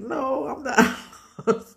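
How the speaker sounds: mock crying, slow, tearful bawling through the words. Retelling answering a stranger while lost as a child: imitating own past bawling. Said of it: "But I'm bawling, I'm crying".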